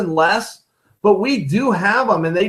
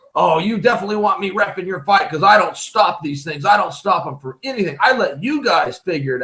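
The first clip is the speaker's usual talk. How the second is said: swaggering, cocky, boastful bragging. Imitating referees at a rules meeting: imitating a bragging referee. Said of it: "brag about the fact that they don't stop fights".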